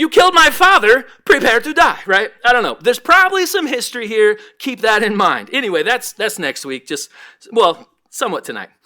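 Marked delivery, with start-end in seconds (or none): 0.0-2.0 loud, pitched-up, belted-out delivery. Joking that the king of Israel quotes a movie: Princess Bride quote voice. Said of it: "Princess Bride, anybody?".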